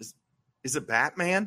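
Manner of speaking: put-on perplexed voice. Retelling a scene where O'Hara asks if it's Batman: imitating perplexed O'Hara. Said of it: "almost perplexed".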